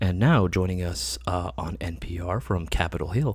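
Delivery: low public radio announcer voice. Telling someone they have a radio voice, then doing an NPR host voice. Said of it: "I'm gonna be the next host of N P R".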